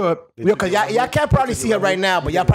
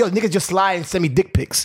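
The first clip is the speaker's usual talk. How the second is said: ordinary delivery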